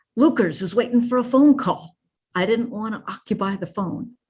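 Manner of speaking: put-on loud stage whisper. Speaker retelling his dad's answer to his mom, imitating a loud stage whisper. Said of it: "one of those stage whispers my dad always used to do".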